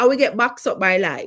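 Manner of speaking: put-on Jamaican accent. Speaker talking about life's setbacks, jamaican accent. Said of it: "That's my Jamaican accent".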